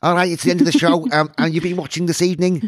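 rough first attempt at a Liverpool accent. Asked to close the show in a Liverpool accent, give it a try: Liverpool accent. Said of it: "You've got to do it in a Liverpool accent".

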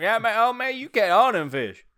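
put-on, very high, loud Florida accent. Joining a bit playing a Florida man heading to Boynton: put-on Florida man accent. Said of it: "why do you gotta put, like, an accent".

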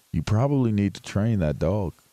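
mock calm, quiet, said under the breath. Retelling what they told a dog owner whose dog knocked a seat over, calmly and quietly. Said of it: "I said very calmly and quietly under my you know".

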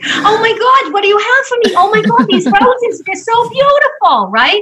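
put-on very high pitch with a touch of New York accent. Retelling walking in to find Candy, the speaker does Candy's New York accent. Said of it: "she does have a bit of a New York accent. So let me do it that way".

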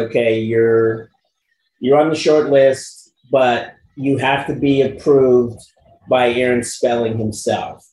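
normal talking voice

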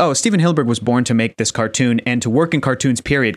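plain

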